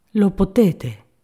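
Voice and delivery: sweet, gentle, tender delivery. A man answers a downcast woman, his hand on her shoulder, gently. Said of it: "disse egli dolcemente".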